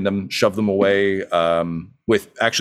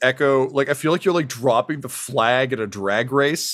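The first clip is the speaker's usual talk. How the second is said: ordinary talk, nothing marked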